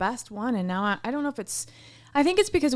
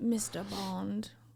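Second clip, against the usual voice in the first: sultry seductress voice, soft slow purr. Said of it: "She sounds like a James Bond".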